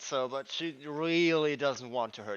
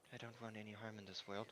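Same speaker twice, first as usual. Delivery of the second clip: very quiet, soft half-whisper; 5 semitones lower, 20 dB quieter than usual. Voicing a spellcaster as she casts her spell: half-whispering. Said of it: "You would hear a whisper".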